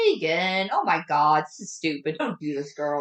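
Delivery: plain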